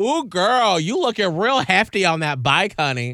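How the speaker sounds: high, loud, belted, sassy mock voice.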